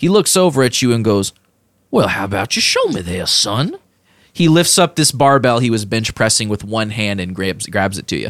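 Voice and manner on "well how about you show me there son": animated character voice, pitch swooping widely up and down. Voicing Danger Bob challenging a player to lift the barbell: Danger Bob voice. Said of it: "Danger Bob's eye twitches ... goes".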